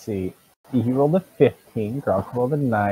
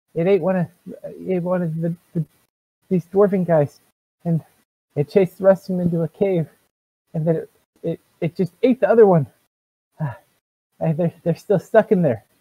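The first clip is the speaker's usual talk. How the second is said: high, frightened, panicked, tripping rush of words; 7 semitones higher than usual. Voicing the panicked dwarf answering what is wrong: panicked dwarf telling what happened. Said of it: "kind of panicked".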